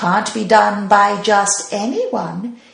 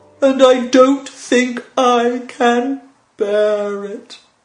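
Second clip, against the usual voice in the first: sighing, mournful, slow, grumbling mummy voice; 3 semitones higher than usual. Narrating a story, voicing the mummy to Sir Charlie and Elfie: mumbling, grumbling mummy voice. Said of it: "and in the middle stood the mumbling mummy of the Pharaoh [name]. / and in the middle stood the mumbling mummy of the Pharaoh [name]. / he grumbled. / he grumbled".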